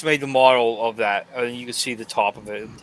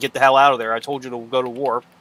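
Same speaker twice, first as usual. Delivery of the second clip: plain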